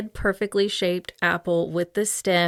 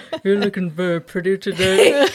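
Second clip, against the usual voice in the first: put-on, attempted man's voice; 7 dB louder than usual. Trying to copy how a female narrator does her men's voices, imitating her man voices. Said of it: "I try and talk like that sometimes".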